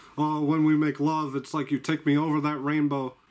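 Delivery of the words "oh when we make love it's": usual speaking voice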